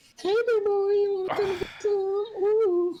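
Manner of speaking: very high, squeaky put-on girl's voice. Imagining the other speaker voicing an adult store ad: put-on girl's voice. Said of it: "I can just see you there just pretending".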